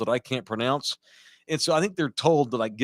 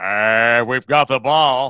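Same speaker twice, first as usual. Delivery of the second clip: deep, very loud, slow booming play-by-play announcer voice; 8 dB louder than usual. Imitating a longtime football radio announcer: Dave South's deep old school voice. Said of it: "He liked to carry his word".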